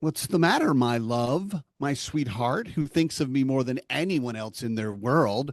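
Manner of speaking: sarcastic, mock syrupy sweetness, sing-song. Retelling own answer to the wife's sigh: imitating own mock-sweet passive-aggressive reply. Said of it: "'Cause I'm petty, and I'm passive aggressive".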